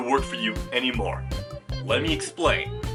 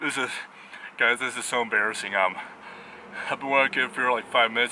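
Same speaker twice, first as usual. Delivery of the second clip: breathless, short of breath; 2 semitones lower than usual. Speaker addresses viewers after five minutes helping with the bushes, out of breath. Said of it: "I'm already out of breath".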